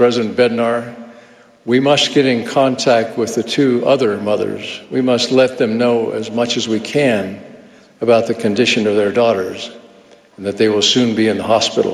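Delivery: ordinary delivery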